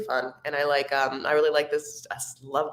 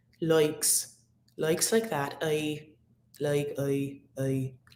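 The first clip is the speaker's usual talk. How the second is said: overdone Irish accent with flattened vowels. Recalling studying accents in college, demonstrating an Irish accent with flat vowels. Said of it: "flat sounding vowels".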